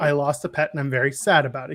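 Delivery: ordinary delivery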